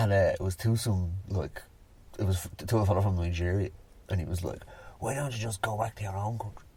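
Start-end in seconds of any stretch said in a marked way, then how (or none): 5.0-6.5 soft, hushed stage half-whisper. Retelling what the principal said to a student: half-whispering a quoted line. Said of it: "I don't know why I whispered that".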